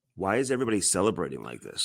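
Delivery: super calm, soft, even, unbothered voice. Retelling what a player's father asked amid celebrations: imitating Jordan Binnington's dad, super calm. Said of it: "Like, super calm".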